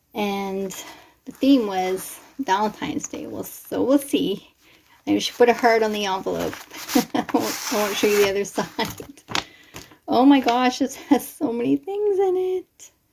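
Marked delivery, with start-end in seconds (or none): 10.0-12.9 squeaky, little, excited high voice, rising. Opening a Valentine's Day swap envelope, squeaky voice. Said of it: "there goes my squeaky voice again".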